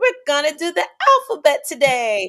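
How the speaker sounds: high-pitched kindergarten teacher voice. Describing a YouTube preschool teacher, the speaker imitates her high-pitched voice. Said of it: "she has a high pitched voice".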